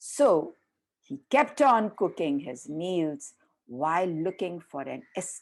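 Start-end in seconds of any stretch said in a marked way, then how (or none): none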